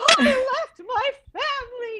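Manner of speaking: play-acted tearful sobbing, voice very high. Retelling being on the block on a show where people go home, imitating own sobbing. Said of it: "I'm like sobbing".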